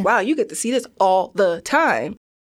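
ordinary delivery

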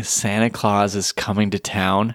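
ordinary talk, nothing marked

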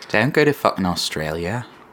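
deliberately botched, failed Australian accent. Joking about a Bible verse, trying a bad Australian accent. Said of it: "That was bad".

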